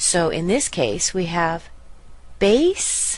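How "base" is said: BASE in baseball drawn out, high and loud. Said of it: "That's a little bit longer and stronger".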